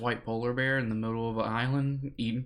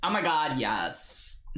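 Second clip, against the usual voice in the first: put-on very slow, drawn-out, wicked, sinister girly voice; 4 semitones higher than usual. Showing a comedian's drive-thru bit: Fluffy's evil girl voice. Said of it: "I can do, uh, Fluffy's evil girl one".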